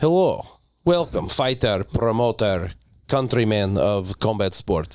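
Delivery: low, put-on Russian accent. Asked to show his accents, starting with a put-on Russian accent. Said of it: "So start with Russia".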